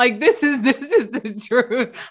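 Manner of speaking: cracking up. Reacting to a man's alphabet example, laughing hard. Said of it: "I am laughing so hard over here".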